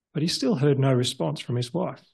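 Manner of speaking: ordinary delivery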